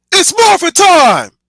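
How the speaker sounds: belted out, loud and heroic. Humoring a chat request for the iconic Power Rangers line: Jason impression. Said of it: "That was my attempt at an impression of Jason".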